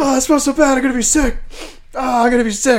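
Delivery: very high, sickened, queasy groaning whine. Retelling what the bus driver said after someone threw up: imitating the queasy bus driver. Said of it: "He's like".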